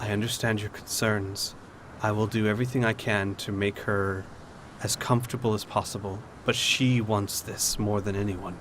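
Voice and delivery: soft, very quiet, hushed voice. Voicing Lady Celine comforting a player character: very quiet voice. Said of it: "in a very quiet voice say".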